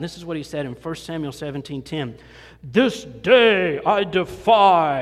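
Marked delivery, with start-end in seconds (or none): 2.6-5.0 very loud, dramatic booming trailer voice, drawn-out "defy". Quoting a challenge yelled near an army's camp, movie kind of voice. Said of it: "that's a movie kind of voice".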